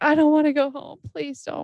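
mock high wailing, bawling, begging crying fit. Retelling how she reacted on hearing she had to go home, imitating her bawling. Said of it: "And she just started bawling".

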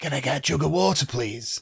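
put-on hoarse, croaky voice. Retelling asking for water after surgery with a sore throat: imitating own hoarse post-surgery voice. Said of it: "my voice was like this".

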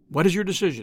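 plain reading voice

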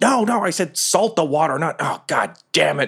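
high, exasperated, fed-up goblin voice. Game master voices an unseen goblin giving orders that aren't followed, in a goblin voice. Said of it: "They definitely sound like goblin voices to you".

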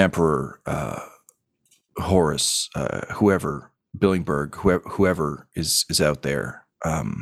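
muttering under breath. A player voices his character speaking to no one, muttered under his breath.

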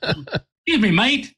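put-on British accent. Retelling how a gentleman from Great Britain on a plane approached: imitating a British accent. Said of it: "they do talk like that".

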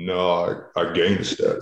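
very slow, drawn-out, level delivery with zero enthusiasm. Retelling what an intimidating guy said, unenthusiastic Bosa impression. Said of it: "But he didn't say it like with enthusiasm".

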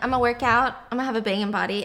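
ordinary talk, nothing marked

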